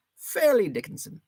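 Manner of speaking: very high English accent slipping into Irish. Streamer says a name like a Charles Dickens character, in an Irish accent trying to be English. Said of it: "I think that was an Irish accent that I just used".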